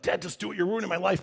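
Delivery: loud stage whisper. Retelling buying a car, imitating the daughter: imitating a loud whisper. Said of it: "that loud whisper where they tell".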